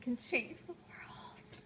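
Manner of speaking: slow, hushed, dramatic whisper.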